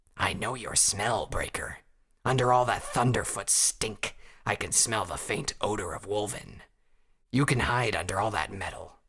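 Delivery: rasping, cackling creature voice. A Wolven speaks to Breaker, cackling and rasping. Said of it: "The old Wolven cackled and rasped".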